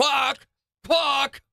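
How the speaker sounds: very high duck quack in a British accent. Quacking like a duck to another speaker: British accent duck quack. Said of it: "And with a British accent".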